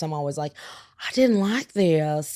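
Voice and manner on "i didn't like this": put-on slow Southern accent, drawled. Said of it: "I always use a Southern accent when I send food back".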